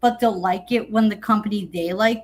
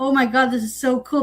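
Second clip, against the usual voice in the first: put-on gushing voice; 3 semitones higher than usual. Imitating wrestling fans reacting to a feud in a new company: imitating gushing fans. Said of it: "and people be like".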